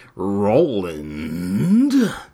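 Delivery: put-on audiobook narrator voice. Show listeners how he says a name from the books, in a Frank Muller impression. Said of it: "That's my Frank Muller impression".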